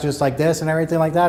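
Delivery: rushed, loud, rattled off at top speed. Showing how voice-therapy clients talk before being asked to slow down: speaking really fast. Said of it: "really speaking really fast".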